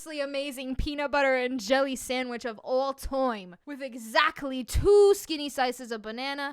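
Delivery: ordinary delivery, nothing marked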